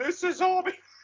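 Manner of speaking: top-of-the-lungs shriek, pitched way up, very loud. Retelling a movie character's message, imitating yelling at top of lungs. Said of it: "starts yelling at the top of his lungs".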